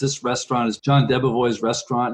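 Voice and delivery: ordinary talk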